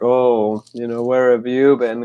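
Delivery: put-on deep, syrupy voice. Retelling how a guy at a dance talked: imitating a deep, syrupy voice. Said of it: "he had this deep, syrupy voice".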